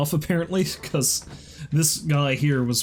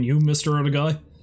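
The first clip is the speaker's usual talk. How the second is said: usual speaking voice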